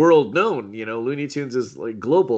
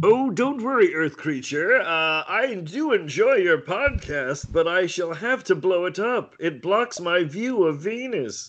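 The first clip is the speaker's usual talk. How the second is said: every word drawn out, pitched higher; 7 semitones higher than usual. Asked by the podcast host to do Marvin, addressing the host: Marvin the Martian voice. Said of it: "You're going right for Marvin".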